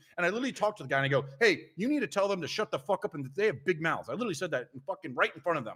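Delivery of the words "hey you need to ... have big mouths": put-on pissed-off, angry tone. Retelling what was said to a store worker: retelling own angry words. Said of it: "'cause I was so pissed off".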